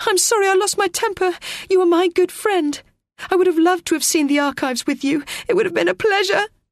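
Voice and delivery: very high, breathless, gasping voice. Narrator reads Teo's reply to Renzo's apology, gasping. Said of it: "gasped Teo".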